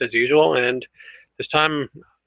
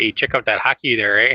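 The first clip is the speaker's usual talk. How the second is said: put-on Canadian accent; 3 semitones lower than usual. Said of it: "in the totally Canadian way here".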